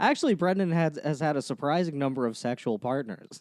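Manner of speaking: normal talking voice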